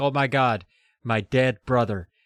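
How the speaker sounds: put-on panicked, frantic cry. Retelling how a character finds her brother on the path: imitating a panicked character. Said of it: "she panics and she runs up to him".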